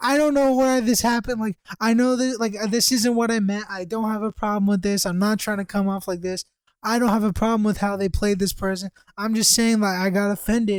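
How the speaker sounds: put-on weepy, sobbing, tearful crying delivery. Retelling what a crying classmate said in a meeting: imitating someone crying. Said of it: "She's crying".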